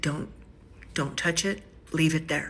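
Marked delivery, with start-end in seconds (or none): none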